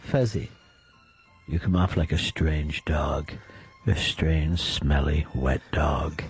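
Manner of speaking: slow, sweet-talking romantic voice. Teasing another speaker with insults, in a mock romantic voice. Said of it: "it's a romantic voice".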